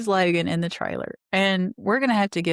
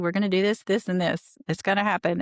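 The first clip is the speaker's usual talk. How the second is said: put-on quick, brisk, efficient fast talk. Retelling someone taking over the packing: imitating quick, efficient speech. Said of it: "she is speaking quickly, efficiently".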